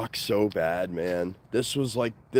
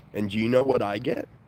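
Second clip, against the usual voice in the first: ordinary talk, nothing marked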